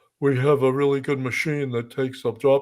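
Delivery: mock low-pitched voice. Discussing a woman who won over investors, imitating her low voice. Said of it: "was the low voice".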